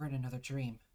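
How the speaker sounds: hushed whisper under the breath. Voicing a character muttering to herself: hushed whisper under breath. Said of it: "hushed whisper under her own breath".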